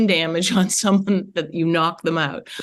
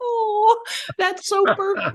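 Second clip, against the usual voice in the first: very high, gushing, delighted voice. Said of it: "And I was like".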